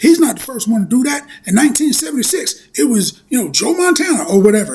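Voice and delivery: imitated loud scream. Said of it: "he's screaming out facts at the T V".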